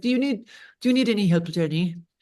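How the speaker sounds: put-on heavy, thick Italian accent, dad-type voice. Jenny retells her dad asking if she needs help, thick italian accent. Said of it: "he has a thick Italian accent".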